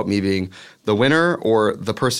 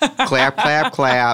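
put-on intense Midwestern accent, laid on thick; 4 semitones higher than usual. Retelling a drag queen at a club in Buffalo: intense Midwest accent. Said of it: "she had the most intense Midwest accent".

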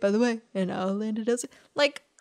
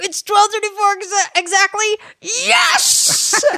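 mock thrilled, very high and loud stoked blurt; 10 semitones higher, 8 dB louder than usual. Retelling how he reacted when Carrie ran up to tell him the time, imitating someone stoked. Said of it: "He was so stoked".

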